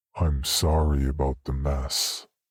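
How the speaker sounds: low, slow, flat, toneless monotone. Narrator reads a man who looks back at the narrator, slow monotone words. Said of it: "said in slow, monotone words".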